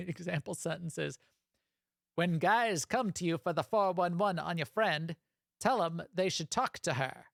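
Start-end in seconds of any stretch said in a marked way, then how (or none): 2.1-7.1 put-on vintage, old-timey 1920s-style delivery. Speaker reading a dictionary's example sentence aloud: 1920s-style voice. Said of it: "I like how in the 20s voice comes out".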